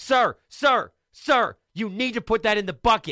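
alarmed, very high, urgent yell. Speaker recounts the record store clerk yelling about the umbrella, imitating an urgent yell. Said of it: "yelled at me".

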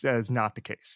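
"that" stressed, falling pitch at end. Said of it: "It is not the case".

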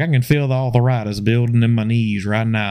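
usual speaking voice

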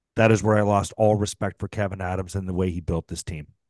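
ordinary talk

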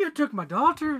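bad put-on Irish accent. Doing a comedy bit while a friend laughs, in a bad Irish accent. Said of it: "you're so good at that bad accent".

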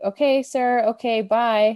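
very slow, sarcastically polite, dismissive tone. Speaker retells a man's reply during a phone call, retelling a sarcastic reply. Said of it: "I guess sarcastically being like".

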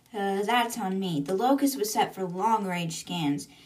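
ordinary talk

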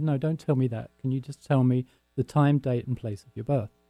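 plain

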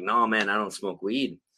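ordinary talk

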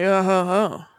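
casual bro-like voice. Doing another line the character said, in a bro voice. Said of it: "He sounded like a bro".

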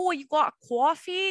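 put-on Brooklyn accent. Talking about regional accents, imitating someone from Brooklyn: imitated Brooklyn accent. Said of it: "like you're from Brooklyn".

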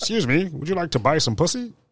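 prim, excessively proper, polite voice. Showing how the question would sound said politely, in an overly proper voice. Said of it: "that sounds so fucking proper".

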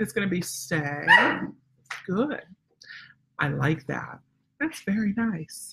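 smooth, calm, even broadcast-style radio voice. Showing how the speaker talks while working on a stay, radio voice. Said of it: "I use my radio voice".

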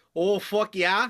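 high-pitched Upper Midwest Wisconsin accent. Asked by another speaker to say a phrase in your Wisconsin voice. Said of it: "in like your Wisconsin voice".

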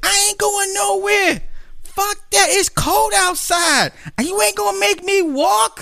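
very high, drawn-out, fussing rant. Retelling a woman's refusal to leave: imitating a woman cussing and fussing. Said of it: "she's cussing and fussing".

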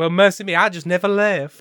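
loud, high Southern belle voice, Southern accent.

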